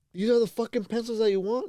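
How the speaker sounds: high, loud, furious snapped outburst.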